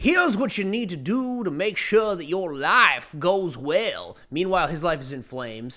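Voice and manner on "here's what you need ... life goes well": high, exaggerated, caricatured Georgia Southern accent. Imitating a man whose own life is in flames, with a caricature of a georgia accent. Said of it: "sounds like a caricature of a person from Georgia".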